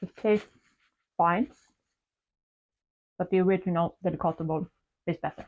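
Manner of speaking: speaking while eating, mouth full. Tasting a new cake and giving a verdict, talking with mouth full. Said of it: "talking with my mouth full".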